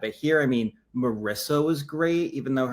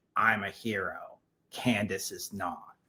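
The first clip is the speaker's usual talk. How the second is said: low, slow, deliberate voice; 5 semitones lower, 7 dB quieter than usual. Showing how Rupert always talks about himself: imitating Rupert. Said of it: "his way where, you know, he's always like".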